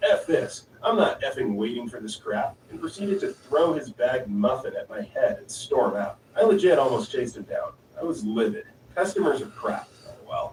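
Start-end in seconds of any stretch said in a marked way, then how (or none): none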